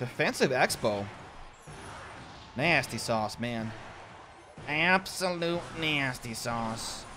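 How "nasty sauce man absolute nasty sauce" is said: slow, quiet, drawn-out cartoon secretary voice. Commentating on a game while playing, Monsters, Inc. Secretary Lady impression. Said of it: "That's my impression of the Monsters, Inc. Secretary Lady".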